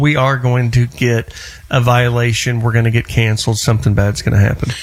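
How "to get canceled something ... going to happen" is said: ordinary talk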